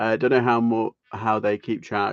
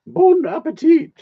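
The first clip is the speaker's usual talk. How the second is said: very high, loud, shrill belted exclamation; 10 dB louder than usual. Joking with viewers while chatting: Julia Child impression. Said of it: "I end up doing Julia Childs".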